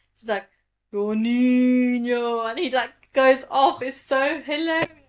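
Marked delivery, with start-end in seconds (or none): 0.9-2.5 calling out, the word niño drawn out. Retelling a comedian's bit where he imitates his mum scolding him. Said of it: "his mum was like that with him".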